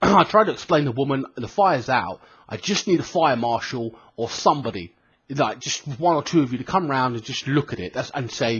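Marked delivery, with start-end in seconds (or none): none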